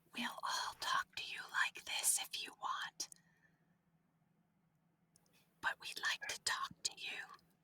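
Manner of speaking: soft, gentle, hushed whisper, barely voiced. A character speaks to an anomaly that is pulling at them, whispering. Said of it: "I'm going to whisper".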